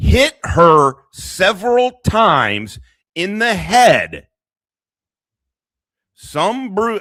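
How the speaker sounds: loud, drawn-out yelling. Reading out a police report, yelling into the microphone. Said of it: "why I'm yelling into my microphone".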